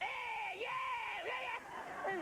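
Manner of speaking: put-on very high, lazy, drawled American kid voice. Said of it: "an American kid would have been like".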